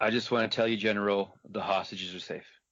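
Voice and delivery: deadpan, very monotone, flat, droning voice. Describing a helicopter fight, the speaker addresses the General in a very monotone voice. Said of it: "I'm going to talk in this very monotone voice".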